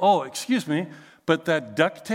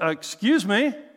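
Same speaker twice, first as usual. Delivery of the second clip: put-on defensive tone, higher; 3 semitones higher than usual. Retelling confronting a man who ignored the seat sign, imitating own defensive tone. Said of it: "I kinda responded with some pretty defensive".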